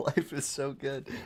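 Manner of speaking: slow, happy giggling. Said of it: "I'm giggling now 'cause I'm so happy".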